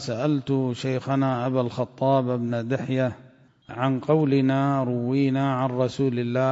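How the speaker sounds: ordinary delivery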